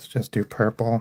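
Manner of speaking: resigned voice. Picking the next color while drawing, in a defeated tone. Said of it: "I don't mean to sound so defeated".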